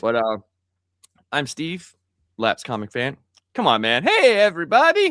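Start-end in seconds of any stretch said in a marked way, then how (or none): 4.0-5.1 loud, high-pitched cartoon voice. Opening the show with a greeting: Doctor Nick voice. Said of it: "That's Doctor Nick from The Simpsons".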